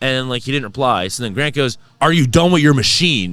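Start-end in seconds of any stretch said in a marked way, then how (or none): 2.0-3.3 acted snippy, challenging attitude with raised voice. Retelling how a friend repeated a question to a stranger at the gym, imitating an attitude-laden question. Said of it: "with attitude".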